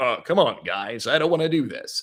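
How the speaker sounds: put-on radio host, announcer-style voice. Retelling protesting to the guys about going along, in a really deep voice. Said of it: "I got like really deep with it".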